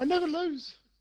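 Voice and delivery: very high, squeaky male voice. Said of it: "sound like the squeaky guy out of Ali G".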